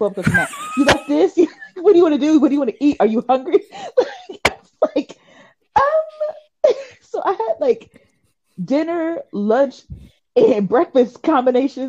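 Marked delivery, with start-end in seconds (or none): 0.8-3.6 high, fast, eager rapid-fire delivery. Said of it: "eight text messages of".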